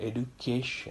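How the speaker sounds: "education" with stress on third syllable "ca". Pronunciation lesson on stressed syllables: education with stress on ca. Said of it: "So I'm stressing K here".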